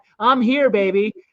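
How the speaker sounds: ordinary talk, nothing marked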